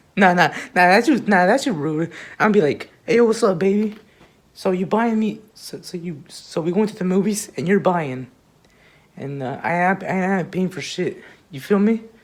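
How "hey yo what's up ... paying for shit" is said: plain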